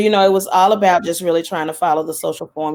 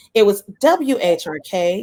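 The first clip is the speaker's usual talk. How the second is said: put-on radio DJ voice, very slow; 3 semitones higher than usual. Recalling a station's name from back then, in a radio voice. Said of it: "Let me get my radio voice".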